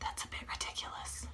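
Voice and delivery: quiet whisper. Tutorial host talking to the camera while cutting, whispering.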